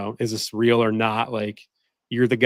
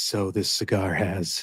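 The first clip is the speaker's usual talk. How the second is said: sultry, hushed, very slow murmur; 3 semitones lower, 5 dB quieter than usual. Speaker showing how he sounds filming Shorts at night, imitating his sexy Shorts voice. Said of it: "that sexy YouTube Shorts voice?".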